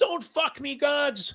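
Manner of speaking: put-on desperate scream. Retelling watching a losing horse race, imitating a desperate scream. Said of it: "screaming at the top of your lungs".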